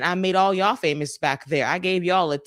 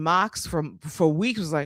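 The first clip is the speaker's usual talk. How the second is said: ordinary talk, nothing marked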